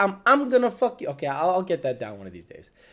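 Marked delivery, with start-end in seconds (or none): 0.0-1.1 stuttered, repeated "I'm", higher pitched. Trying to get a man's stutter right while quoting him; imitating a stutter. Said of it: "he does a stutter".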